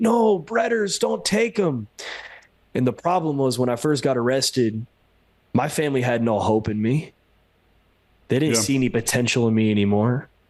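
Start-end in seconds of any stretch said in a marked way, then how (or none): 0.0-1.9 mock screaming grandmother voice, high pitch. Retelling being led out in chains: imitating grandma screaming. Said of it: "her voice just screaming".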